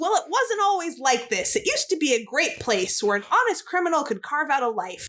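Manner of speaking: usual speaking voice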